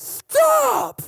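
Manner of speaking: stern, very high, shrill, rough, authoritative shout. Retelling a mother stopping older kids: imitating a mum's authoritative shout. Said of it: "You know that mum sound that".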